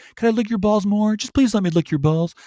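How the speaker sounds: put-on, dead-on Cuban Texan accent, pitched high. Retelling how Ted Cruz acted toward Trump, doing a Ted Cruz impression. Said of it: "That accent, pretty dead on for a Cuban Texan".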